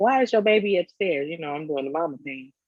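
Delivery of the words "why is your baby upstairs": loud, high-pitched yell. Retelling calling downstairs for the daughter: imitating own past screaming. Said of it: "I'm screaming out for Autumn".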